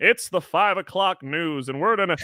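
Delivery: five o'clock news anchor voice, announcer delivery. Mocking how people on the news talk: imitating a newscaster voice. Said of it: "what is this voice?".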